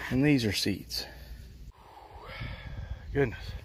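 winded, breathless, breathy near-whispered murmur. Showing off plants grown from seed, out of breath. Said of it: "I'm out of breath".

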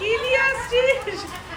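high-pitched scolding tone while laughing.

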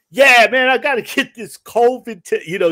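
put-on heavy Jersey accent, very loud, high pitch. Act out a masked man yelling on speakerphone about his COVID test, in a thick, heavy Jersey accent. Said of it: "just thick, heavy uh, jersey accent".

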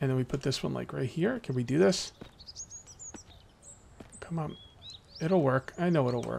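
hushed tense whisper. Building a wall in a game, tense: whispering. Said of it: "I'm like whispering because I'm so freaking tense right now".

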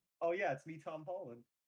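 put-on Queens, New York accent. Answering a summons in a joke bit, Tom Holland with Queens accent. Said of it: "why do you sound like you're from Queens?".

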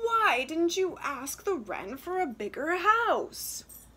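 loud, high words pushed out on a groan. Luba's mother, told by her daughter about the enchanted wren, groans. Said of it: "her mother groaned".

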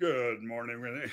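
deep radio DJ voice. Retelling messing around doing little radio dj voices together: radio dj voice. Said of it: "doing our little radio DJ voices".

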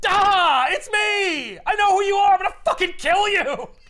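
mock shrill, booming, thrilled, very high, loud excited shriek. Retelling a comic scene, acting out Green Goblin: imitating an excited Green Goblin. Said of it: "Green Goblin's just so fucking excited".

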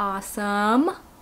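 strong stress placed on the word awesome. Signing off a video to viewers, with stress on awesome. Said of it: "emphasis on the awesome".

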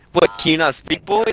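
high, loud screaming cop voice. Retelling how a cop questioned him: imitating a cop screaming. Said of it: "he starts screaming at me".

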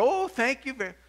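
put-on old lady voice, pitched way up. Telling a story, the speaker gives the visitor's thanks in an old lady imitation. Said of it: "This is my old lady imitation".

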